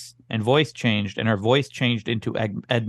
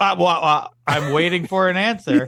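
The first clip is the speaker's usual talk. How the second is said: high, whiny, mocking whine; 7 semitones higher, 4 dB louder than usual. Retelling what the other speaker said after getting an answer: mocking imitation of the other speaker. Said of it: "and you were like".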